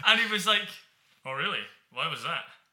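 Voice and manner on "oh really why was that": put-on Scottish accent. Retelling meeting Andy Murray, quoting his reply: Andy Murray impression. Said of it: "is that your Andy Murray impression?".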